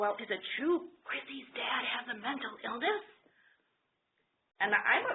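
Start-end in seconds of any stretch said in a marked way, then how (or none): 0.0-3.0 put-on whisper, higher. Retelling a question whispered from another restroom stall: imitating a whisper. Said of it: "the whispering voice comes back".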